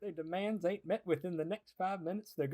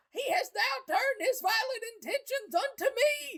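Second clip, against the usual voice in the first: very high, terrified, fearful shriek. Warning the Captain that the sleepwalker has turned on them, screaming.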